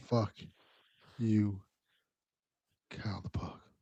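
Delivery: slow, low, sensual murmur, very quiet. Repeating what Delvin said this morning, imitating Delvin, low and sensual. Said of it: "That was getting low and sensual".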